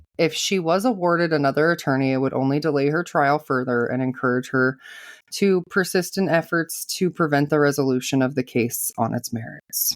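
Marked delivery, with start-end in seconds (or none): none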